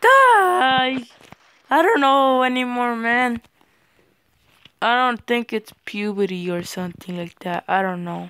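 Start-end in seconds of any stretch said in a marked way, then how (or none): 0.0-1.0 voice cracking in a very high yell. Player getting mad at a game, yelling at an opponent, voice cracking. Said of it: "my voice keeps cracking everywhere".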